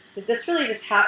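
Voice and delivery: ordinary talk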